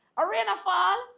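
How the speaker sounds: loud, high-pitched, disbelieving tone.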